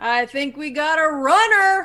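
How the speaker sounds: loud, alarmed, hollered yell. Yelling in character so people on the third floor hear: yelling loudly. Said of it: "I'm gonna yell loudly".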